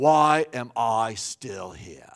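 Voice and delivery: put-on South African accent. Retelling what Pat said in the emergency room, imitating Pat's South African accent. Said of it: "with that South African accent".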